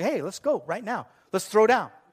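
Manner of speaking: cocky, brash, combative tone. Retelling a grandfather challenging an unseen voice: imitating someone picking a fight. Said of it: "he thinks someone's picking a fight".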